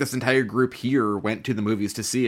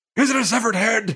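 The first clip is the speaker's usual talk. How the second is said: pitched right up into a squeak; 10 semitones higher, 3 dB louder than usual. Recalling a line from an earlier version of the character: Christopher Lloyd impression. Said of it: "Christopher Lloyd being like".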